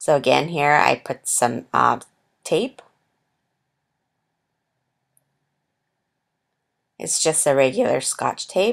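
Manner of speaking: cracking, breaking voice. Explaining how the tape goes onto a turtle decoration, voice cracking. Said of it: "my voice is um, cracking".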